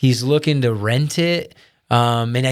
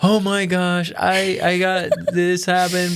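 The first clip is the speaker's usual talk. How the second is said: high, slow, tearful crying voice; 5 semitones higher than usual. Retelling a call from a wife on her way to work: imitating someone crying. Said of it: "crying on her way to work".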